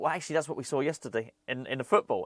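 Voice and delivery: ordinary talk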